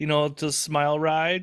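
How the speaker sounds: ordinary talk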